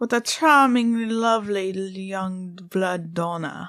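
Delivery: butchered, bad, put-on Transylvanian vampire accent. Introducing today's subject, vampires, the speaker quotes a line; bad Transylvanian accent. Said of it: "That was a bad accent".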